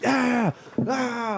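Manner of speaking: high-pitched, rowdy whooping party yell. Retelling a rowdy man yelling all night: imitating someone yelling. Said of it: "he's been yelling, like".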